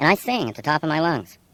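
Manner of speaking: normal talking voice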